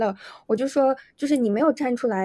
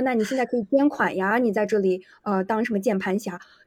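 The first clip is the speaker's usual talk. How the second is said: ordinary talk, nothing marked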